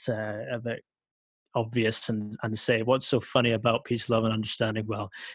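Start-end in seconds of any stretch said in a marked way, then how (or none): none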